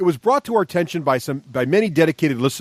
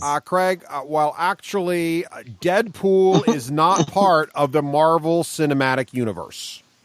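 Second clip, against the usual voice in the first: ordinary talk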